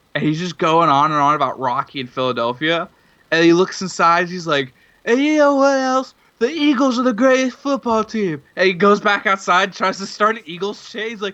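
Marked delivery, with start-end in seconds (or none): 5.1-8.5 mock, very high-pitched yelling at full volume. Telling a story about a man ranting about philadelphia: imitating a man's yelling. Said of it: "He's yelling at the top of his lungs".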